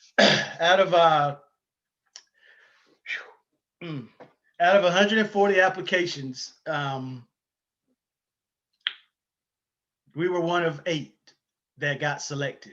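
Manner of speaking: choked up, voice catching with emotion. Telling how few applications were selected, still choked up. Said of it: "I'm trying not to get choked up here".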